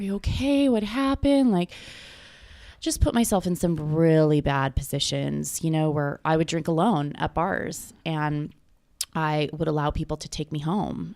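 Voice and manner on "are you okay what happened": put-on crying, very high, tearful and worried. Retelling parents coming into the room: imitating crying upset parents. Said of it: "crying, like, so upset".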